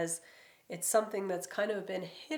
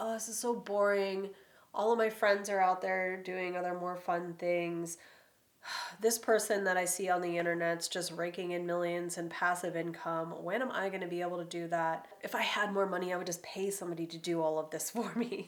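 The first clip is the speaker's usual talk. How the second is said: plain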